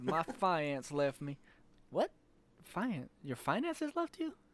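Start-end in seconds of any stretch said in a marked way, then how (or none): 0.0-1.4 put-on southern drawl, slower. Retelling what a woman said, quote her words in a southern drawl imitation. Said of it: "southern drawl".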